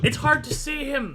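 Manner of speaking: very high, loud, alarmed yell. Game master voices a guard who can't see the fleeing player, guard yelling. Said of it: "The guy is yelling".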